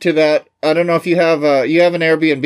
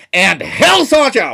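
put-on announcer voice; 4 semitones higher than usual. Line for walking into the ring, in imitation: Mean Gene voice. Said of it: "I'm going to do an imitation of Mean Gene".

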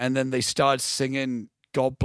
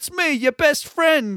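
bad, put-on pleading voice, higher and louder; 13 semitones higher, 5 dB louder than usual. Retelling a film scene where De Niro pleads with his friend. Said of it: "I'm doing a bad impression".

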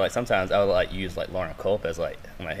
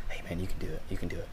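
whisper, much lower and quieter; 2 semitones lower, 9 dB quieter than usual. Recalling Jason watching him work out, whispering like Jason. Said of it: "just whispers".

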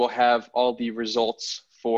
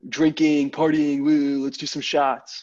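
put-on bro-ish party-guy voice; 4 semitones higher than usual. Explaining to listeners what Chads are, in a Chad frat-bro voice. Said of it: "Is that your Chad impression?".

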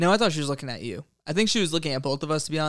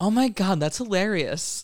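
put-on pitched-up girl's voice, done very accurately; 5 semitones higher than usual. Retelling what a girl said to him: imitating a girl. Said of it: "doing one girl's impersonation spot on".

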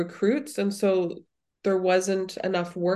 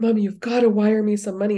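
put-on crying, tearful, desperate, panicked pleading tone; 5 dB louder than usual. Recalling a phone call from her child abroad, imitating tearful panicked child. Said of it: "she's in tears and like the world is ending".

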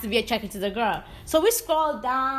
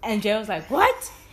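normal talking voice

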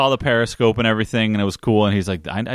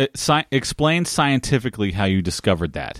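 plain

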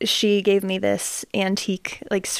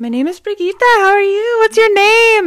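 put-on very high, very loud Swedish accent voice; 13 semitones higher, 10 dB louder than usual. Greeting the kids at Mandy's house in character, with a put-on Swedish accent. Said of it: "I was doing the Swedish accent".

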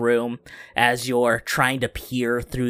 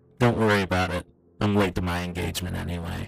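distorted, warped-sounding voice; 5 semitones lower than usual. A narrator voices a figure speaking from the shadows, distorted voice. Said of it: "you hear that distorted voice in the shadows".

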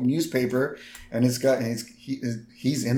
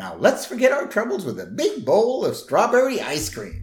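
high, swooping, sing-song talking doll voice; 8 semitones higher, 3 dB louder than usual. Retelling the talking doll's line after the string is pulled: imitating Malibu Stacy doll. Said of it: "Malibu Stacy goes".

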